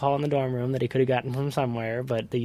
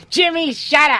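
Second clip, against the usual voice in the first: put-on shrill, very high, loud old woman voice; 10 dB louder than usual. Retelling how a dad and son mimicked a great-grandma: imitating great-grandma's voice. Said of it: "my dad and I would make this voice around my great-grandma".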